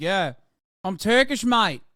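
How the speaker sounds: put-on loud, deliberate, drawn-out Australian accent. Acting out a Turkish man speaking English to you, in an Australian accent. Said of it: "with a fucking Australian accent".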